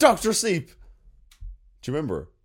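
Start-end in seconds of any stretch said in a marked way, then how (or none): 0.0-0.7 very high, very loud top-of-the-lungs shout. Retelling what he yelled after waking up: a shout at full volume. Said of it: "shouted out at the top of my fucking lungs".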